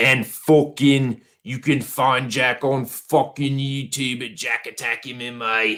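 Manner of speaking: horrible fake British accent, high pitched. Plugging someone's Twitter and YouTube handles: horrible put-on British accent. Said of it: "That's my horrible fucking British accent".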